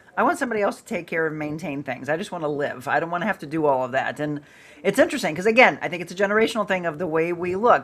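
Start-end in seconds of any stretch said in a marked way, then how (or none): none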